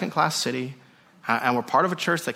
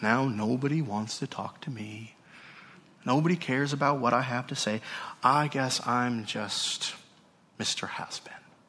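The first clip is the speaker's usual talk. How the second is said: put-on cartoon donkey voice, slower; 3 semitones lower, 5 dB quieter than usual. Demonstrating a complaint to listeners, in the Eeyore voice. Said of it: "in the Eeyore voice".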